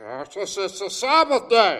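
booming voice, delivered slowly and high. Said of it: "That's my best Pharisaical voice".

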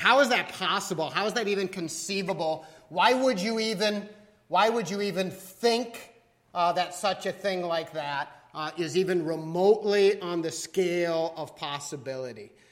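ordinary delivery

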